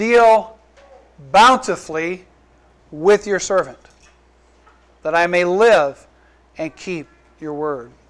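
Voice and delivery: slow reading with long pauses between phrases.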